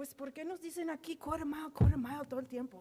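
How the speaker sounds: play-acted, grumbling, complaining older man voice. Retelling what an elderly husband said on a lake walk: imitating his complaint. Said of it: "so I'm gonna say it like, like I heard it".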